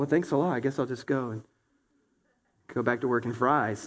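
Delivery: mock discouraged, dejected, deflated delivery. Acting out a dreamer answering critics: imitating a discouraged person. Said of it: "you're so discouraged".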